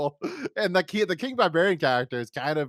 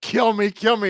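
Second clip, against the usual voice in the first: high, loud, imploring begging, repeated; 7 semitones higher, 6 dB louder than usual. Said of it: "he's like".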